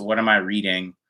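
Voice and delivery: normal talking voice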